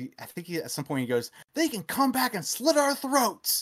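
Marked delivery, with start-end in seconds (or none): 1.5-3.6 acted, furious, very high, angry ranting shout. Retelling the pimp's angry tirade from a movie: imitating an angry tirade. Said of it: "goes on this huge angry tirade".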